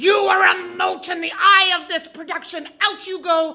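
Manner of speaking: mock furious, high, raging, ranting scream. Recalling a man firing a cast member in front of the cast, retelling furious screaming. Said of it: "he was screaming".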